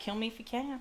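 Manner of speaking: put-on emotionless tone. Retelling a character's line to a fighter: imitating emotionless delivery. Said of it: "Completely non-emotion".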